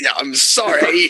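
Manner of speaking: clumsy put-on British accent. Retelling a dream where he apologizes, bad British accent. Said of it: "I can't stop speaking in this British accent".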